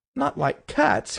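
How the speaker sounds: piercing, shrill, impassioned outcry. Narrator reads the Mouse crying out to Alice, shrill, passionate voice. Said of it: "cried the Mouse in a shrill, passionate voice".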